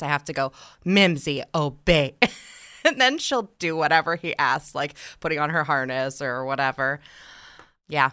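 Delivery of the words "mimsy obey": mock dead-serious, commanding voice. Describing how she gets her 'daughter' to obey: retelling her serious voice. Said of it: "I go in a serious voice".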